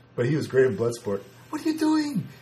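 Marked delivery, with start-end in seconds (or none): 1.5-2.3 put-on impression voice, pitched very high. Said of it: "That's my Jean-Claude Van, Van Damme impersonation".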